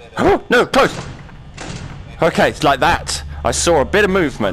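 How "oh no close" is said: panicky, caught off guard, commentary-style delivery. Player checking game corridors after seeing movement, panicking. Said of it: "and I'm panicking".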